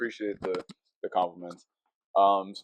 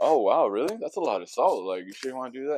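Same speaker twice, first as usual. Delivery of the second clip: play-acted amused, teasing voice with a little giggle; 4 semitones higher than usual. Retelling how the server questioned the salt request: imitating a giggling server. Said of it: "she kinda giggled about it".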